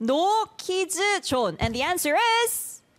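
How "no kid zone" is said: pitched-up put-on Korean accent in English. Saying a requested phrase in a guessing game, korean accent. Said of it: "Korean accent".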